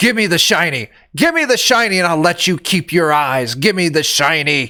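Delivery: half-shrieked, screeching harpy creature voice. Voicing a harpy that grabs a shield: harpy screaming. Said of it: "it starts screaming at you".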